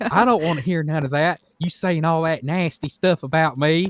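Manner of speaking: high-pitched, angry, fed-up country woman voice. Retelling a woman fighting on the phone at the grocery store: imitating an angry redneck lady. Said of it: "like a real redneck type lady".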